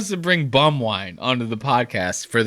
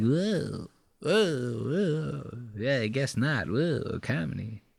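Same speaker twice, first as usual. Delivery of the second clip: very quiet, slow, drawn-out mutter under breath; 9 dB quieter than usual. Retelling how Mark reacted while putting away a corkscrew, imitating Mark muttering under breath. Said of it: "he's like talking under his breath".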